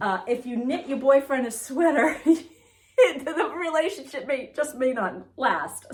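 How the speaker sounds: high, slow, laughing through the words.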